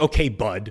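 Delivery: loud, curt, dismissive, passive-aggressive tone. Reading out chat replies, imitating a passive-aggressive tone. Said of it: "passive aggressive".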